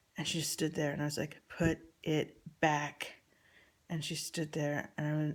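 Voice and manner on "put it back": play-acted mean, harsh, unfriendly, not-nice tone. Retelling telling Poppy to put the shirt back: imitating a not nice voice. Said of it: "in a not nice voice".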